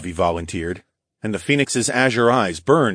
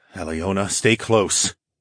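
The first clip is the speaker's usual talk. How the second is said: plain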